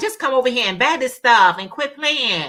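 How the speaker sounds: plain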